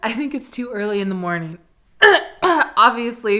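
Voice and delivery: cracked voice, breaking mid-line. Talking to camera early in the morning, voice cracking. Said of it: "even my voice is cracking".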